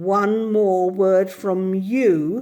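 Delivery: peculiarly menacing, slow, with you drawn out. Narrator reads a woman warning someone who keeps arguing, in a peculiarly threatening voice. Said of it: "in such a peculiarly threatening voice".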